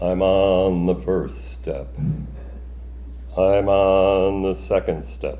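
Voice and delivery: deepest put-on voice, slow, deliberate, called out. A parent plays a bedtime stair game with daughters, calling in deepest voice. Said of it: "I called in my deepest voice".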